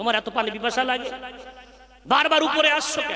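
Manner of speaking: angry, scolding, rebuking tone.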